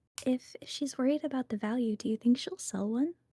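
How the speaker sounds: hushed, half-whispered aside. Asking another character a question in character: half-whispering. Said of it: "I'm gonna whisper to Caldwell".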